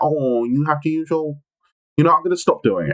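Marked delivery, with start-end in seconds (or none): 0.0-1.3 put-on, toddler-style baby-talk voice. Showing how the joke line was supposed to sound: put-on baby talk. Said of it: "it was supposed to be, like, baby".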